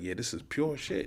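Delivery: pleased, satisfied, approving voice. Speaker mocks how a man talks by acting out someone tasting a kilo, imitating a satisfied drug buyer. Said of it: "you dip your finger in the kilo and you lick your finger".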